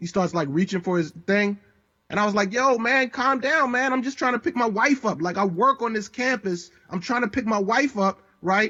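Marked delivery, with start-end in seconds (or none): 2.5-8.2 mock, raised, pitched-up pushing-back voice. Retelling being stopped by a police officer: retelling own raised voice. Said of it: "why are you raising your voice at me?".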